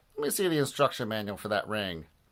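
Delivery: ordinary delivery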